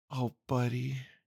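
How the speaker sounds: cooing softly. Narrator reads a woman's reply to the narrator's declaration of love, cooing softly. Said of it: "she cooed softly".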